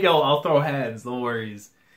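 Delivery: ordinary delivery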